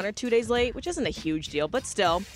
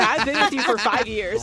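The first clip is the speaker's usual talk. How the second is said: ordinary talk, nothing marked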